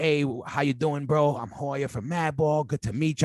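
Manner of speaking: put-on, very proper and formal-sounding voice. Retelling an email sent to a new booking agent: imitating being all proper. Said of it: "I'm being all proper".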